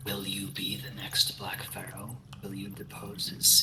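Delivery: quiet, hushed whispering voice. Game master voicing a magic book speaking to a player, whispering book voice. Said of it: "It whispers quietly".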